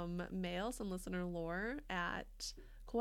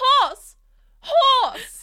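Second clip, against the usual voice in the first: very high, very loud yell in a German accent; 24 dB louder than usual. A podcast bit dedicated to listener Ron, shouted in a German accent. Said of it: "shout horse, horse in a German accent".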